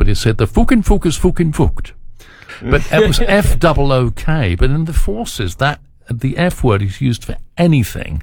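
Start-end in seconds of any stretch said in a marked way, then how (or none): 0.4-1.9 imprecise attempted Geordie accent, much higher and faster. Recalling a Geordie from army band days at an automat, attempted Geordie accent. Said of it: "I can't do the Geordie accent precisely".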